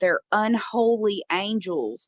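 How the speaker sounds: usual speaking voice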